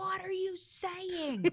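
put-on high, slow child's voice.

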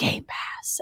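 soft, secretive, hushed, breathy whisper, barely voiced. Acting out a safe in the home that opens and speaks: whispering. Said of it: "it just whispers".

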